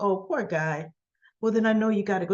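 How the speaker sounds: plain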